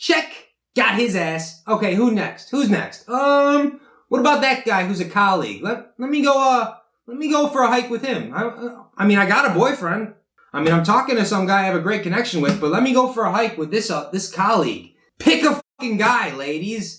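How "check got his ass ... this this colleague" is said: put-on scheming, calculating, manipulative girl voice. Imitating a girl after a guy says he loves her: imitating a girl keeping options open. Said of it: "she's gonna be like".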